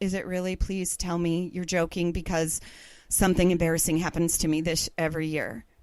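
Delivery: low, flat, wilted, deflated and defeated voice. Retelling what she said to a woman at a coffee bar, in a defeated voice. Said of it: "in a very defeated frame of voice".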